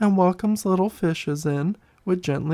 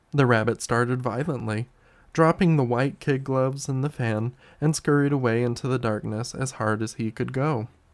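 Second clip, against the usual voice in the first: ordinary delivery, nothing marked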